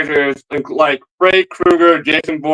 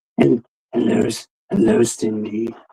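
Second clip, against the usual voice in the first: low, creepy voice. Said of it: "here's the Ghostface voice without the, without the voice changer device".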